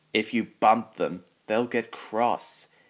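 ordinary delivery

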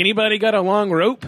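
joking, jokey tone. Retelling how they spoke up after going quiet and scared: retelling a joking remark. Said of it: "just jokingly".

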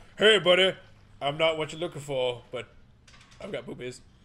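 very loud put-on big pig monster brute voice. Joking about what the big pig dude would say: imitating a big pig dude. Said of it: "the big pig dude, like".

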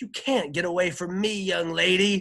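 shrill, very high, loud hollering. Narrating Jane's former teacher calling after Jane, hollered. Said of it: "she hollered".

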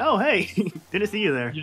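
sarcastic fake kindness. Recounting a summoning-circle scene, greeting someone, retelling sarcastic kindness. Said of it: "I'm being sarcastically kind".

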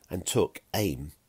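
plain reading voice

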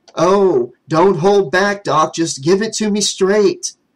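high, sarcastic exclamation. A man answers his doctor after hearing the computer's verdict, exclaiming sarcastically. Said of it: "Jimmy exclaimed sarcastically".

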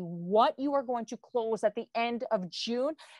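normal talking voice

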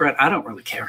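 ordinary talk

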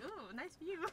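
hushed, very quiet, soft dog voice. Voicing the dog's thoughts as it looks out: voicing the dog. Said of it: "He's like".

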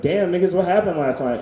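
ordinary talk

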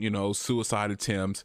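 ordinary talk, nothing marked

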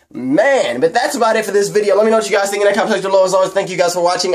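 eager, breathless-sounding, fast, excited chatter. A video creator wrapping up a one-take upload to viewers, speaking really fast, excited. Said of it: "I am speaking really fast because I'm really excited".

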